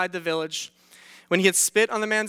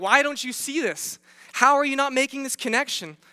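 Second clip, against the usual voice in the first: high, exasperated, frustrated yelling outburst; 6 semitones higher than usual. Recounting yelling at the disciples while reading, retelling a frustrated yell. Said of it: "I'm yelling at the pages. I'm like".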